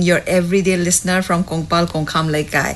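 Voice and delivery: ordinary talk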